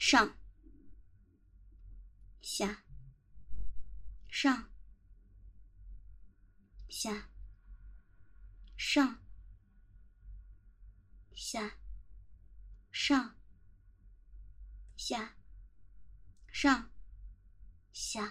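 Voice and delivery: slow count, "up" spoken, each "down" dropped to hush. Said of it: "慢慢的，听着".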